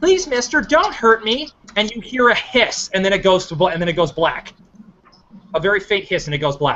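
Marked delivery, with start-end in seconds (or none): 0.0-1.5 put-on high, small young girl's voice. Voicing a young girl the pastor hears as the clip goes dark: young girl's voice. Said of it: "he hears the young girl go".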